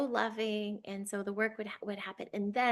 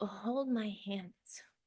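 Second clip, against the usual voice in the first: choked-up voice catching with emotion; 4 dB quieter than usual. Recounting how she put out her hands to the speaker, choking up. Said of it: "See, I'm getting emotional".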